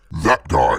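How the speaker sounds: deep character voice, dropped low. Imagining a scene where Venom points at someone: Venom voice. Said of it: "he just points to Tom Holland and says".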